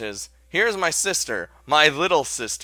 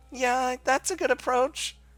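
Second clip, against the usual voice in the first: very high, squeaky, stammering dog-toy voice; 11 semitones higher than usual. Answering what you find sexy, calling it just a joke: very high squeaky voice. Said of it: "My voice is so high it sounds like a squeaky dog toy".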